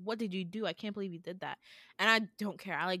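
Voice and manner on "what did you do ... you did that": mock horrified disgust, quieter. Retelling what the speaker's mom said on seeing the speaker, in mock horror and disgust. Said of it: "looks at me in complete horror. Like, in disgust".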